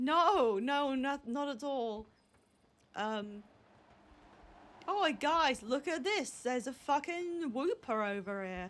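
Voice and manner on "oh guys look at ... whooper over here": failed, bad put-on joke Australian accent. Calling the group over to look at something, in a bad joke Australian accent. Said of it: "I was trying to do Australian as a joke".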